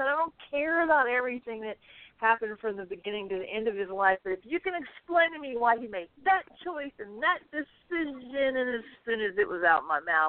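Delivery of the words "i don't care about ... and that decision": high-pitched, snarky, snide delivery. Retelling yelling back at the TV during Star Trek: imitating yelling at the TV. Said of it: "I yelled back at the T V".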